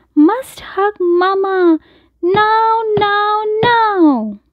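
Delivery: insistent, very high, slow bear cub voice. Reading a story aloud, giving the little bear's line: little bear cub voice. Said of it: "It's my mama. My mama is lost. / It's my mama. My mama is lost. He shivers and droops and covers his eyes and cries, / he says".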